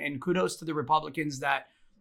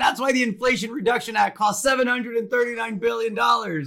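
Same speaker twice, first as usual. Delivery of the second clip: acted-out shouting, pitched up; 7 semitones higher, 4 dB louder than usual. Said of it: "The dad yells back".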